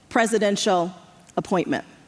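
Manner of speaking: normal talking voice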